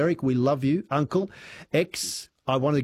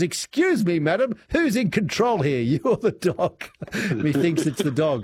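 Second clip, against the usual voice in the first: imperious, grand, condescending tone, pitched up; 5 semitones higher, 3 dB louder than usual. Retelling Hugh Worth's reply to a woman who rang, mock-imperious Hugh Worth voice. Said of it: "in his imperious voice".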